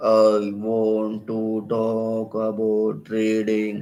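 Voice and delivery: very slow, dull, flat robotic machine drone. Voice modulation lesson, showing a boring way to speak: flat robotic monotone. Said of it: "imagine you speak like a robot".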